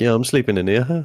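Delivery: mock calm, unbothered, easygoing, a bit high. Imitating a friend coolly taking the mattress out: imitating someone with no anger. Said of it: "you had no anger on you".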